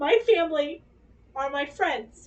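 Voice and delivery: voice catching, choked up, about to cry. Explaining why Mother's Day mattered to them, the speaker is on the verge of tears. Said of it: "I'm about to cry".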